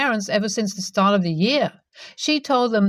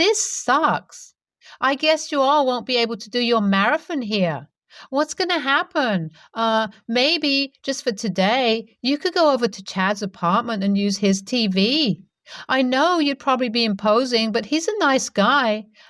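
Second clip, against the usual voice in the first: acted, most irritating, grating, maddeningly annoying voice; 3 semitones higher than usual. Retelling what the smug sister said: imitating an annoying tone. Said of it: "in the most annoying tone ever".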